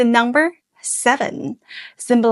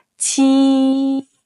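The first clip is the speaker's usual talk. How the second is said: high level tone on Qi, held steady, drawn out. Teaching a name's tones step by step: high level tone on Qi. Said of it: "sit in a high, steady tone like this".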